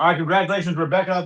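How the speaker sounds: speaking with mouth full of food, chewing. Congratulating someone while trying to eat lunch, speaking with mouth full. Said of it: "y'all had my mouth full".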